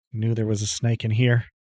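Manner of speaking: through gritted teeth. A player voicing their character after a snake attack in the barn, through gritted teeth. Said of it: "say through gritted teeth".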